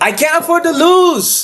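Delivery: very high, clumsy, bad Brazilian accent. Act out someone telling a dude what is at stake, in a bad Brazilian accent. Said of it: "my Brazilian accent is shit".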